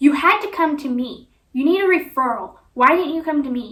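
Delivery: loud, irritated voice. Retelling a doctor demanding a referral: imitating a raised, angry voice. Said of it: "she raised her voice again at me".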